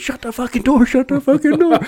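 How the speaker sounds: mock, shrill, very high, repeated screaming. Retelling being pinched in a truck door: imitating someone screaming. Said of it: "I'm screaming".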